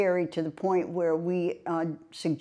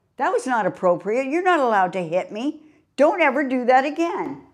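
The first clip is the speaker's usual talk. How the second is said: loud, high, reflexive holler; 7 semitones higher, 7 dB louder than usual. Retelling being slapped in a closet alone: retelling own past yelling. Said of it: "I'm yelling into thin".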